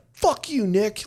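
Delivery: play-acted, very high, arguing screaming yell. Retelling hearing a guy arguing down the hall: imitating Pete Rothke yelling. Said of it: "I hear him like yelling and screaming".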